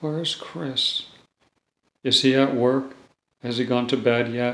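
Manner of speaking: play-acted wistful, longing, yearning tone, a bit sad. The speaker retells a woman with Alzheimer's asking after a man, retelling a yearning, sad voice. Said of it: "in a very yearning, kind of sad voice".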